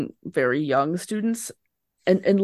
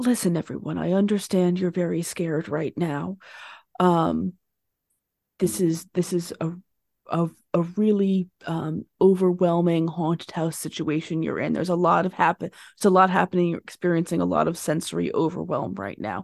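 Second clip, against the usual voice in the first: soothing, gentle, calming, reassuring. Voicing a character crouching to calm scared students: soft calming voice. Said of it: "as soft a voice as she can".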